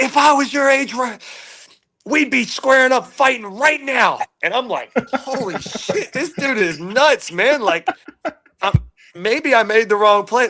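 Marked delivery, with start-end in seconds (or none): 0.0-4.2 very high-pitched, furious, raging angry delivery. Retelling how a man threatened him after a play, imitating someone ripping into him. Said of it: "he's ripping me".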